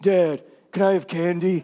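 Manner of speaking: put-on small boy's deepest possible voice. Retelling Evan asking his dad for candy at breakfast, in Evan's very deep kid voice. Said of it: "he's got the deepest voice for a four-year-old".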